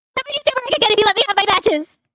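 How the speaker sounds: high, super fast, rattled-off rush.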